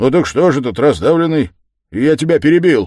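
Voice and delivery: hurried, blurted shout. Razumikhin picks the conversation back up after interrupting, shouted hastily. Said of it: "крикнул поскорее Разумихин".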